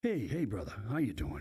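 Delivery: imitated gravelly voice. Retelling a phone call received on the way to a Red Sox game, imitating Jim Crocker's gravelly voice. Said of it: "with a gravelly voice, he'd kind of grind at you".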